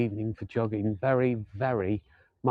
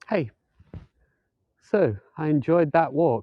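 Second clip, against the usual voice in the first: out of breath, winded, higher and louder; 5 semitones higher, 6 dB louder than usual. Finishing a walk and talking to the folks watching, out of breath. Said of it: "I'm a bit out of breath".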